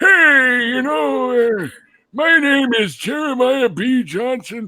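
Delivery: put-on very high, drawn-out old man voice. Describing a role he played, showing the old guy voice he should have used. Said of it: "I should have used like an old guy voice".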